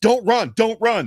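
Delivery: very high, loud shouted yell. Retelling yelling at a player who is about to run: retelling own yelling. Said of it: "And I start yelling".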